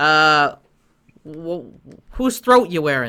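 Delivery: loud squirrel security guard character voice. Voicing a squirrel security officer questioning the players: squirrel security officer voice. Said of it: "and he'll go".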